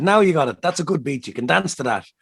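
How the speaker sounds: put-on strong Longford accent. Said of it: "in her very Longford accent".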